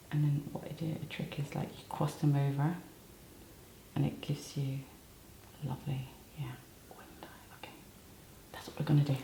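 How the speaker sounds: quiet, hushed whisper. Applying lashes and explaining her trick to someone, whispering. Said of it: "So I'm whispering".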